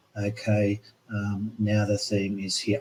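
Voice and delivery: bored, unengaged, low, quiet, passionless delivery. Explaining presentation marks, the speaker mimics a student presenting without passion. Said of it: "I don't want you sitting there going".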